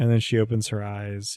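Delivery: ordinary delivery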